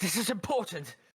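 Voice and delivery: put-on, very high, fairly loud British accent. During a tabletop game, a player speaks as Ryler in a British accent. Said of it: "Why is Ryler in British now?".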